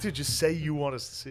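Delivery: plain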